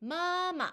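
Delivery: high flat ma, then dropped ma. Chinese tone lesson, first tone before neutral tone: high ma then sharply lower ma. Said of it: "이 일성 뒤에 경성이 왔을 때는 음의 높이가 뚝 낮아지면서".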